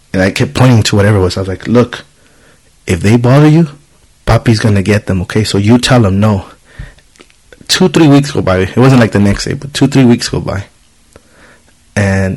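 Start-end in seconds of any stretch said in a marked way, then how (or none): none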